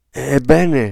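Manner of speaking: out of breath. A man in a room of cradles asks the nurse, panting. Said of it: "ansimò Mr. Button".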